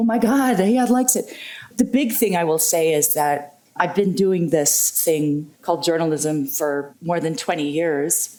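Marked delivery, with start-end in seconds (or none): 0.0-1.4 acted, high, excited, joyful lunatic screaming. Retelling jumping up and down at the airport: retelling an excited scream. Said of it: "practically screaming like a lunatic".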